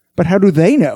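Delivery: ordinary delivery, nothing marked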